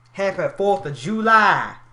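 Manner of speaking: very loud, high rural Southern drawl, "July" stretched. Saying a holiday greeting, in a mock redneck accent. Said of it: "I'm trying to mimic the most redneck accent ever".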